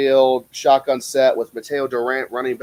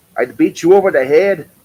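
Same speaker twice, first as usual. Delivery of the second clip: loud, belted-out, bad Scottish accent; 4 semitones higher, 7 dB louder than usual. Recalling his old character from the local circuit, in a bad Scottish accent as McKinley. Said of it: "I can't do a good Scottish accent, but I tried".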